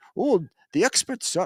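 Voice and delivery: high, bad attempted British accent. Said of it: "I can't do a British accent".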